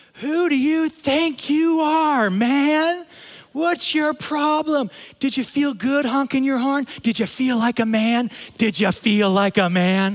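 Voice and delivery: high, loud, drawn-out screaming rant. Retelling what a driver screamed at him after he honked, retelling a woman screaming. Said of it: "She screamed out".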